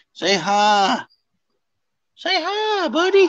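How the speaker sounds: very high-pitched pet-talk voice. Coaxing the dog Axel to say hi to everybody, in a talking-to-dog voice. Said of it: "I just heard my dog voice on there".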